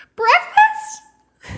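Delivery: very high, loud, piercing shriek. Retelling waking up confused at dinner time: imitating her own shriek. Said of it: "just the shriek of".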